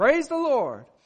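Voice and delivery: very high loud shout. Telling a joke about a lady on her porch: acting out a shout. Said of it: "and she shouted".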